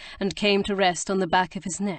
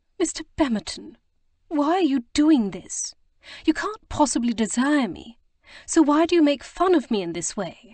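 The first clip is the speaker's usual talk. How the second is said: trembling, wavering, tremulous, pitched-up voice; 6 semitones higher, 3 dB louder than usual. Reading a novel aloud, a woman answering a kiss: tremulous voice. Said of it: "In a tremulous voice she said".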